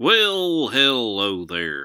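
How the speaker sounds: loud, coarse, rough-edged cowboy voice. The speaker opens with a greeting, showing off a coarse cowboy voice. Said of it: "That's my coarse cowboy voice".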